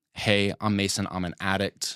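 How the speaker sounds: plain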